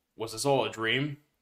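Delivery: plain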